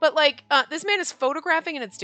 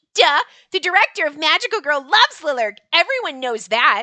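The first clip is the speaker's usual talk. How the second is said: put-on loud kid character voice; 5 dB louder than usual. Voicing the kid's lines while playing: voice for the kid. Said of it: "the best I could do for his voice".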